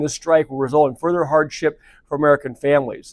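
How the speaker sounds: ordinary delivery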